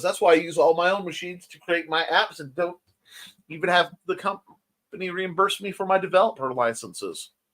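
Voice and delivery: ordinary delivery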